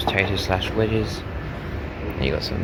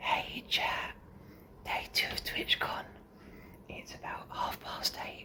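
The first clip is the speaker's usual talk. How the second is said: hushed, breathy, very quiet whisper. Greeting chat early on a TwitchCon morning while someone is still in bed, whispering. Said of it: "I'm whispering because Harper's still in bed".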